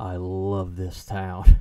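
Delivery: very loud, very slow, deep, booming movie-intro voice. Quoting a favourite movie's opening lines from memory: bad impression of the Jason Takes Manhattan intro voice. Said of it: "my bad impression of that".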